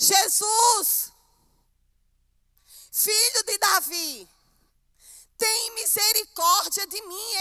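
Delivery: acted, slow, loud, drawn-out desperate begging cry. Retelling a blind man's plea as jesus passes: imitating a blind man shouting.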